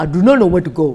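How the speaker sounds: loud, over-the-top, exaggerated put-on Chinese accent. Joking about playing chinese characters: exaggerated chinese accent. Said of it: "it's just an exaggerated version".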